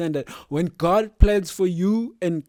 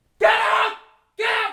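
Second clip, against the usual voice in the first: shrill, very high yell; 3 dB louder than usual. Showing his usual tactic with dogs, shouting at a dog. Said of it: "That's my shouting voice".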